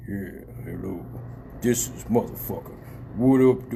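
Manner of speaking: very deep, low, rumbling bass voice. Retelling how a man answered the phone, imitating a very deep voice. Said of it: "this motherfucker deep ass voice vibrated".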